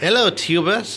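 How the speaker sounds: worst put-on English accent, high and loud. Greeting viewers at the start of a video in worst English accent. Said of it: "That's my worst English accent".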